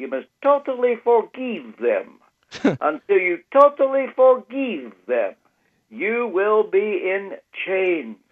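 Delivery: put-on Romanian accent, high pitched and swooping. Retelling what a man kept repeating to the speaker, in his Romanian accent. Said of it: "I can hear him in his Romanian accent".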